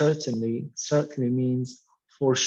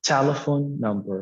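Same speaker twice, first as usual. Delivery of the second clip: stress on telephone, number unstressed. Teaching compound noun stress, with stress on telephone in telephone number. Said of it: "The stress will be on the first word".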